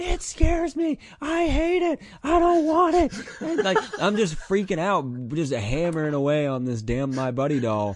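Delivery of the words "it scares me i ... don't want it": put-on very high, shrill, loud, frantic, freaked-out kid's yell. Recalling being seven and hammering away on a doll: retelling a childhood yell. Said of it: "and I'm yelling".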